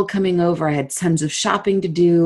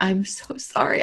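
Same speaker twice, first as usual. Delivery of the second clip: put-on sobbing, much quieter; 2 semitones higher, 6 dB quieter than usual. Recounting apologizing while in a woman's arms, retelling a sobbing apology. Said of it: "I am sobbing in her arms".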